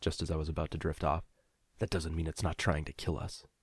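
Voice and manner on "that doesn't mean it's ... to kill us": mumbled under breath, much quieter. Narrator reads a companion's remark as the narrator drifts to sleep, muttered. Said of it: "Nico muttered".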